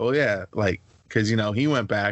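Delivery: ordinary talk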